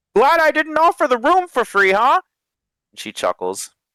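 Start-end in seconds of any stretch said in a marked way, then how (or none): 0.2-2.2 very high, pitched-way-up hollering voice. Voicing a character answering from another room: hollering back. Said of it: "you hear him holler back".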